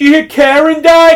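very loud, very high, shrill holler. Retelling locals at a bar calling across to each other: imitating someone yelling. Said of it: "yelling across the bar to each other".

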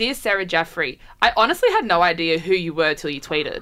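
ordinary talk

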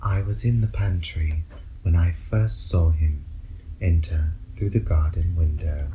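very soothing, low voiceover voice. Speaker, copying TV shows, gives the English line as a very soothing voiceover. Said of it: "we'll have like a very soothing voiceover".

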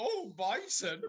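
put-on saucy comedy voice. Retelling another speaker's reaction to a pun in a Carry On voice. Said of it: "Charlotte turning around and going".

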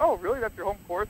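fast, heavy sarcasm with mock disbelief. Describing how followers reply to a running joke, mimicking sarcastic followers. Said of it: "Like real sarcastic".

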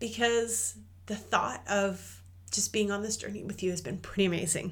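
teary, voice catching, choking up. A host recording for Courage Cast listeners, teary and choking up. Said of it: "I'm actually feeling a little teary actually as I'm recording this".

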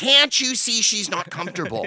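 mock very high, loud, drawn-out shrieking scream. Retelling audience women yelling at security, imitating women screaming. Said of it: "screaming at the security".

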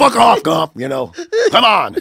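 very high, raspy, rough, aggressive holler. Describing Lieutenant Dan always yelling at Forrest, acting out his mock yell. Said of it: "Lieutenant Dan was always yelling at Forrest".

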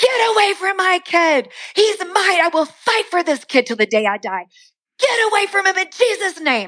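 very high-pitched screaming. A mother retells pulling him into their room to fight for her kid, retelling screaming. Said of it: "I'm screaming at him".

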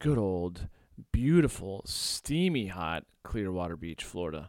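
heavy, mock-glowing sarcastic praise.

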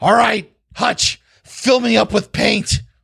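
goblin-like character voice. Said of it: "he's like".

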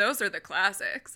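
mocking put-on voice. Imitating a certain group of people: sarcastic imitation. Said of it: "I don't know if you can hear my sarcasm".

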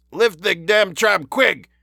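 muffled pinched-nose shout. A man in a cage, holding his nose, shouts to the inspector and detective: stifled shout. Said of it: "he shouted in a stifled voice".

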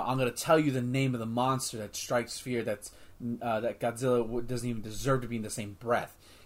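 ordinary talk, nothing marked

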